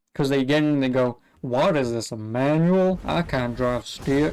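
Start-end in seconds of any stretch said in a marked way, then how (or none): 1.5-4.4 really bad put-on American accent, slow. Imitating an american who finds a manual car: really bad american accent. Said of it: "that was a really bad accent".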